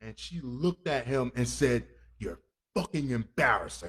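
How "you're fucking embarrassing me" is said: mock seething rage, barely contained, much lower pitch. Retelling what a woman said when she turned towards a man; retelling barely contained fury. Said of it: "the lava was like right there in her voice".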